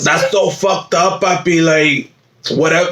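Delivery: put-on New York woman's voice and accent. Performing a bit as a new york woman, in a new york woman's voice. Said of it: "I like the ladies with this voice from like like the New Yorkers".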